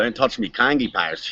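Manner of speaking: put-on Australian accent. Performer doing an Australian accent on a listener's request, Australian accent. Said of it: "asking if [name] will do his Australian accent".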